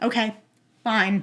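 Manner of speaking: mock flat, deadpan delivery. Retelling how a date answered while staring, imitating a deadpan reply.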